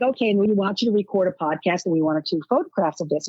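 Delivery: ordinary delivery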